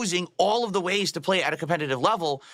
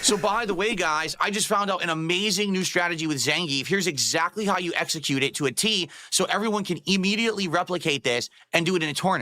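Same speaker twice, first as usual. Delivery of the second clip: usual speaking voice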